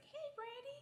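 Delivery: really high voice, pitched way up top. Retelling dad's first phone call, imitating a really high-pitched voice. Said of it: "there was this really high pitched voice".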